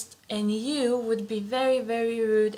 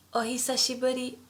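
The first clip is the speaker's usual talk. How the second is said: very fast, casual お久しぶり. Language lesson, showing the casual form of the greeting, said very fast. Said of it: "we say it very fast".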